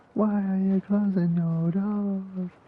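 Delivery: very high-pitched, shrill scream. Recalling a video of an old man outside a store, retelling a man screaming. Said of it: "just screaming".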